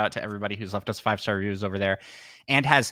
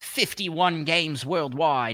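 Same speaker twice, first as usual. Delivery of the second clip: clumsy fake Australian accent, some words drawn out. Trying out an accent mid-conversation, in a bad australian accent. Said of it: "Is that is that a good Australian accent?".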